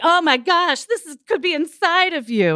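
dramatic, played big, very high in pitch. Retelling how Tyra Banks opened her talk show: dramatic Tyra Banks imitation. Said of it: "being all dramatic and being like".

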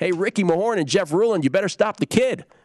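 very high, screamed delivery. Retelling yelling at players from the stands as a kid: imitating own past scream. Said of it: "and I screamed".

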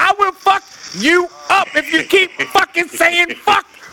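put-on very high, slow, drawn-out menacing yell. Retelling how they scold someone for cussing, acting out yelling. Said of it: "when I'm yelling at him for cussing".

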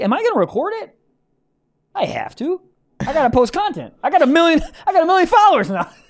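mock bragging, high and loud.

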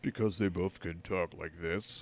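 low, gentle voice. Imitating Elizabeth Holmes while naming a TV casting: Elizabeth Holmes voice. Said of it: "My impression of Elizabeth Holmes".

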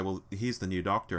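ordinary delivery

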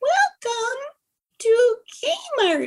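very high-pitched crazed voice. Speaker imitates a kmart deli worker's greeting in a crazy high voice. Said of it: "this crazy high voice".

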